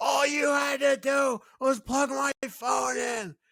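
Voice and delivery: mock drunk screaming, very high-pitched and shrill. A drunk woman next to the speaker starts screaming again; imitating her screaming. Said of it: "she starts screaming again".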